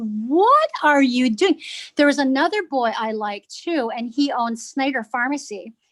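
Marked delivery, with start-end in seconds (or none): 0.0-1.6 put-on slow, swooping, loud, drawn-out scream. Retelling her reaction to her dad's words on the phone: imitating her own past screaming. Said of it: "I was just screaming".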